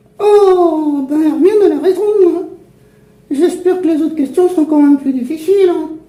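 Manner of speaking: put-on cheeky puppet voice with Saint-Étienne accent. Ventriloquist voicing the puppet answering questions: puppet voice, Saint-Étienne accent. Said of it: "La marionnette [[name]] et son ami ventriloque ... Voilà que je prends l'accent stéphanois moi maintenant".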